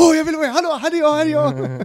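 mock eager, needy voice. Mocking own eagerness to join in: mocking imitation of eager self. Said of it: "det är jag som bara så här".

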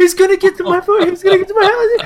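put-on very high, frantic, rushed panic, close to crying. Retelling a scared kid's reaction to a game zombie: imitating someone almost in tears. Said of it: "almost in tears".

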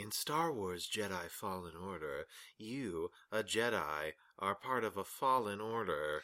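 soft, very slow, drawn-out narrator voice. Describing a game shown at a conference, mimicking someone narrating it: imitating a narrator. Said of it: "someone narrating it and going".

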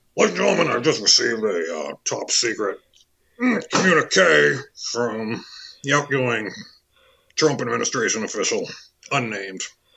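radio-host announcer read with slight Texas twang. Reading a texted message aloud as Alex Jones: Alex Jones impression.

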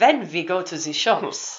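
put-on English spoken with a German accent. Describing the German accent he had when he came back, German accent. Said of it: "I had this German accent".

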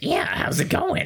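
very high, seedy, sleazy, shady character voice. Showing a game character's voice: shady gross person voice. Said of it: "close to the same voice".

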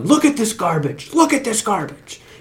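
high-pitched, frustrated yelling. Recalling a man whose microphone fell apart, the speaker imitates him yelling. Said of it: "he just started yelling".

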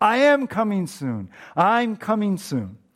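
loud, swooping preacher cadence building to fever pitch. Retelling a sermon about Jesus' return, imitating the preacher's voice getting louder. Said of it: "his voice got even louder".

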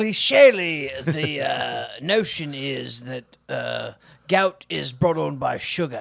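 put-on deep voice. Using a made-up word in a sentence, in a deep Lord Alfred Hayes voice. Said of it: "kind of deep Lord Alfred Hayes voice?".

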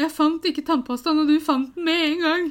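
mock sobbing, high, loud, tearful. Recounting a moment at the bathroom sink with someone, retelling crying while talking. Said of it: "Så begynte jeg å grine igjen".

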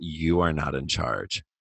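slow, menacing delivery. Retelling a TV scene where June confronts Commander Lawrence: imitating June, slow Godfather-like. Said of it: "very slowly, very Godfather-like".

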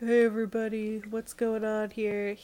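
flat, low-energy, toneless delivery. Retelling an episode scene, imitating Stefan: low-energy Stefan impression. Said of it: "so low energy this episode".

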